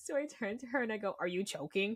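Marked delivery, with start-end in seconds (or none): 1.2-2.0 mock mean, nasty, cutting, unkind tone. Retelling asking a friend choking on popcorn: imitating a mean tone. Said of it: "I accidentally said it really meanly".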